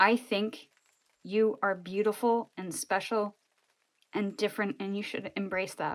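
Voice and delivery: choked-up, halting voice breaking with emotion. Giving a reading, encouraging the listener: choked up. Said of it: "I'm getting choked up".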